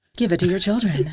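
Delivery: put-on TV commercial announcer voice. Recalling first getting in front of the mic, doing a fake Robitussin ad voice. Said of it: "I did a fake voice like".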